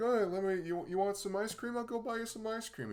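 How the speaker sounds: very high-pitched, soft voice. Imitating Asgore as a soft, fluffy dude offering ice cream: soft, fluffy Asgore voice. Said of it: "a soft, fluffy dude who's just very like".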